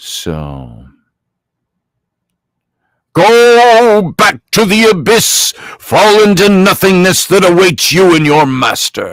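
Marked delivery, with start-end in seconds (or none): 3.1-9.1 pitched-up wizard voice, "go" drawn out. Showing how they read these books aloud to their kids: Gandalf voice. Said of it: "It's fun getting into voice".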